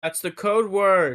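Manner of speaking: loud, projecting voice. In character, telling the group the code word: saying it very loudly. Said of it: "I say very loudly".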